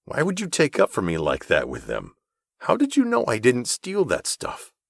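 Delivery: speaking through gritted teeth. Reading a story aloud, a character questioning his benefactor: speaking through gritted teeth. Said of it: "Through gritted teeth".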